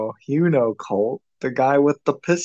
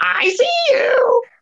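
put-on annoying voice, higher and louder; 4 dB louder than usual. Imitating a game character's line: imitating Colette's annoying voice. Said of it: "[name] thinks her voice is really annoying".

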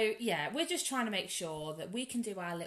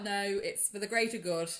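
plain

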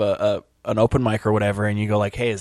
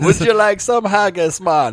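Scottish accent slipping into Jamaican accent; 9 semitones higher, 5 dB louder than usual. Joking about failed accents, putting on a Scottish accent slipping into Jamaican.

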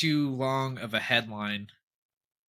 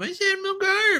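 very high-pitched shriek. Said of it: "screams out".

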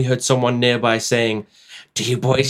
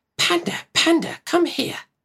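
eerie, creepy, very high calling voice; 4 dB quieter than usual. Reading a scary story aloud, voicing an unknown voice from the other room: creepy voice. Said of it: "heard a creepy voice from the other room saying".

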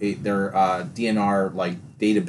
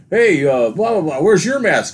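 very loud, pitched-up shout; 9 semitones higher, 8 dB louder than usual. Retelling how a man in a store yelled to the checkout lady: imitating someone yelling. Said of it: "yells over to the checkout lady".

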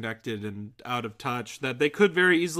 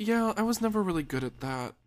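pitched-up female character voice; 8 semitones higher than usual. Acting out a scene, answering George in a Nora voice. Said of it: "I can do a Nora".

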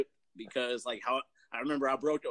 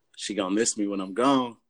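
forced put-on deep voice, low, raised; 3 semitones lower, 6 dB louder than usual. Giving a little preview of what the speaker once said, in a put-on deep voice. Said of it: "I tried to make my voice deep".

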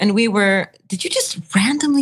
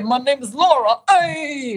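put-on Bronx Puerto Rican accent voice; 4 semitones higher than usual. Speaker imitates how a woman from New York sounds: Puerto Rican New York accent. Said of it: "That is what she sounds like".

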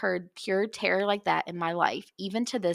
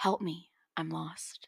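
quiet, hushed male whispering voice; 2 semitones lower, 8 dB quieter than usual. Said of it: "whispering in a quiet man's voice".

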